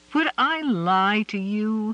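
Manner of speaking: unhurried, slow, drawn-out murmur. Narrator reads her line to him as she slides on top of him, murmured. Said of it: "she murmured".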